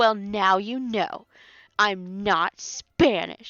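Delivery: mock-angry, emphatic. Speaker retells an angry woman's retort to her, mock-angry and emphatic. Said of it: "She was just so emphatic".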